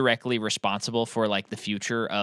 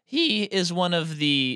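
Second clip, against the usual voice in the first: voice cracking, much slower; 7 semitones higher than usual. Talking with another person about a cinematographer: voice cracking. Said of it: "Do you hear my voice crack there?".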